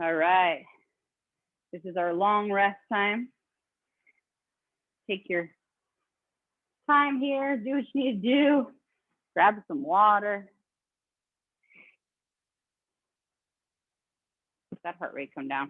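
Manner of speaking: breathing hard, out of breath. Talking viewers through a rest break after a fast round, breathing hard. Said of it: "I'm breathing hard".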